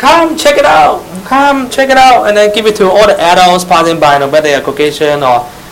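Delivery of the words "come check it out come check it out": put-on loud, very high, cute little girl voice. Describing kids handing out leaflets at a street fair: loud, cute little girl voice. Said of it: "with their undeveloped voice, still like a girl, girl voice, very cute voice, loudly say".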